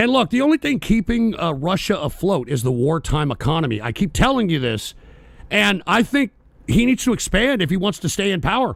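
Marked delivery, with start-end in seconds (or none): none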